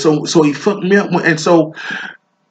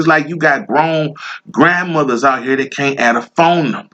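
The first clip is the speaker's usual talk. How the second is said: normal talking voice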